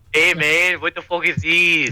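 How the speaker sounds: put-on accent heard as Canadian. Speakers redo a line in different accents; put-on accent heard as Canadian. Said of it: "That's Canadian".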